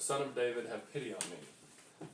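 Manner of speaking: ordinary talk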